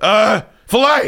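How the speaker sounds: flustered, panicked hesitation. Retelling a friend's steak order at a restaurant: imitating a panicked order. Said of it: "you want me to do the impression".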